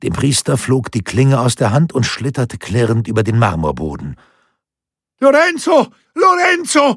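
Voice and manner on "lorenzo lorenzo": loud, very high-pitched shout. A narrator reads a man with a sword amid a fight: shouting. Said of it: "schrie Gentile de Becchi".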